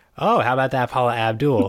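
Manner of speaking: put-on cartoon character voice. Retelling a cartoon scene, the speaker does a Jamit impression. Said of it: "that was my impression of Jam- of Jamit".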